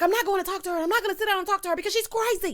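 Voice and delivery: leaning in, high, very fast, frantic rant.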